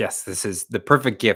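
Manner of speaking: ordinary delivery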